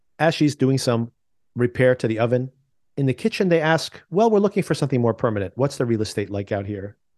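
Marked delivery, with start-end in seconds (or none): none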